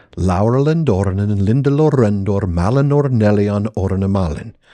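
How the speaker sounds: ordinary talk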